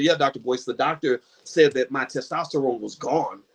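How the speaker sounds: ordinary delivery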